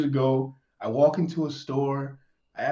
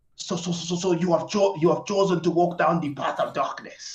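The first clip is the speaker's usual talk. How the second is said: put-on Nigerian accent with a stammering, stuttered start; 3 semitones higher than usual. Imitating a guy's nigerian bit from videos, in a put-on nigerian accent. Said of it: "I can't do the accent as good as him".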